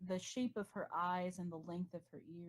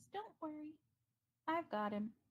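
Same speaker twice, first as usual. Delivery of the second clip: small, very high, tiny little voice; 9 semitones higher than usual. The game master voices someone behind the party offering help, in a very small voice. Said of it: "a very small voice behind you that says".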